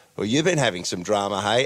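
ordinary talk, nothing marked

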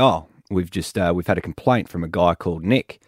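normal talking voice

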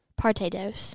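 put-on parte dos, American accent.

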